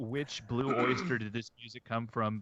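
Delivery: ordinary delivery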